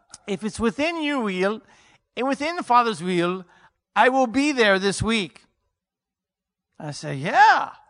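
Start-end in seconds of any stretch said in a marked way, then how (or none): 0.2-5.4 attempted put-on English accent, loud and high. Retelling an old man's call offering to come this week: put-on English accent. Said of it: "I'm trying to do an English accent".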